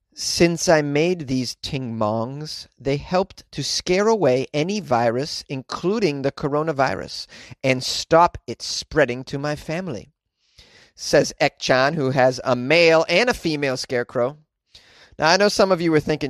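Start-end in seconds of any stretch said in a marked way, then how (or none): none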